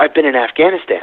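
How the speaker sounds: mimicked, put-on whisper. Retelling a colleague's answer in the hall, imitating his whisper. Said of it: "he kind of whispers and says".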